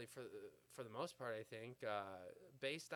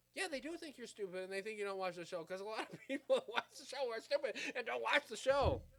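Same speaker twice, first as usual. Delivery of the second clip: very high, very loud, agitated, worked-up rant; 10 semitones higher, 9 dB louder than usual. Speaker venting about a show, getting worked up. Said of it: "I'm getting myself worked up over here".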